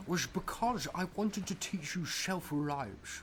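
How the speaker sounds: Scottish accent. Carrying on the bit though the other speaker calls it painful, in a Sean Connery accent. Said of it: "I should say this in like a Sean Connery accent".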